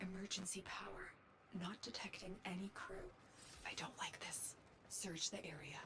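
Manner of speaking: speaking in a whisper. Speaking inside the player's head during the game, whispering. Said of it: "Why is she whispering?".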